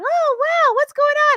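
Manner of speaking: put-on excitable little kid voice, very high and loud. Speaker imitates an excitable young kid asking questions, cute little kid voice. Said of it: "has this cute, like, little kid voice".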